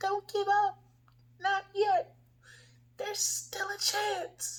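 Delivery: very high, small, squeaky mouse voice. Voicing a small inner voice of hope: tiny little mouse voice. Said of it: "like a little mouse voice saying".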